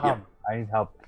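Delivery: gurgling cry. Voicing an illusion that calls for help: gurgling dying cry. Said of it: "you've got that gurgling blood cry there".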